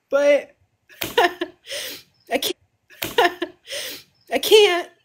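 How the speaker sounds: crying while talking. Saying the parents would tell them to stop, crying while talking. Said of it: "Stop the fucking crying".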